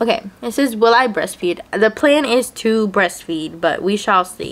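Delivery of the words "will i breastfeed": ordinary talk, nothing marked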